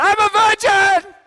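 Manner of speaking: very loud, high, exuberant, joyful shout. Retelling how a man shouted out his car window: imitating a joyful shout. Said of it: "he just shouts out".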